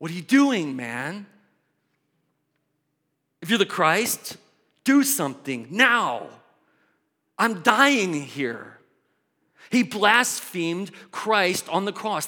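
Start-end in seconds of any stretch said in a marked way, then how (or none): 0.0-8.8 insistent, demanding, acted outburst. Acting out the criminal on the cross telling Jesus what to do: imitating a criminal demanding. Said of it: "He's telling Jesus what Jesus ought to do".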